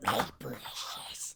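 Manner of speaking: hushed, breathy whisper. Praising characters, then quoting a line: Gollum voice. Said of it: "are you Gollum?".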